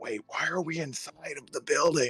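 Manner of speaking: really loud theatrical stage whisper. Voicing a character asking why the group went inside: really loud stage whisper. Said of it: "that really loud stage whisper".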